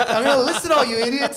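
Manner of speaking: mock ranting preacher voice, heated and forceful.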